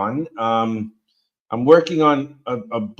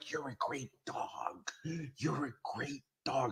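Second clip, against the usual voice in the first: very soft, breathy murmur, barely voiced; 2 semitones higher, 22 dB quieter than usual. Retelling a movie scene, imitating Owen Wilson. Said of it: "Owen Wilson, where he's like".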